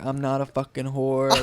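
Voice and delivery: put-on, slurred drunk speech. Retelling what a drunk woman told a guy in a chicken shop: imitating drunk slurring. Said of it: "slurring her words, like, super drunk".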